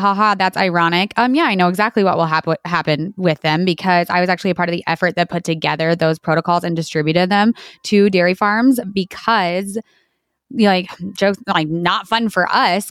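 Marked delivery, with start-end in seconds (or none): 0.0-1.1 put-on wry, ironic laughing. Showing how a laugh was meant: mock ironic laughing. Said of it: "I'm laughing like".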